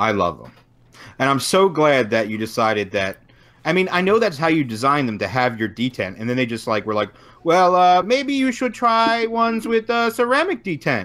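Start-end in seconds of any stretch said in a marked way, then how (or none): 7.4-11.0 fake Chinese accent, very high-pitched and slow. Speaker quotes what others told the designer, in a put-on Chinese-sounding accent. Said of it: "is that a Chinese accent now?".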